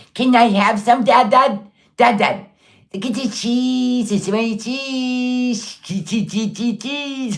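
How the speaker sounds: mocking babyish little-kid voice, baby talk. Mocking someone who gets excited at the cheese section: mocking baby talk. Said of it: "She gets all baby talk as soon as she sees cheese".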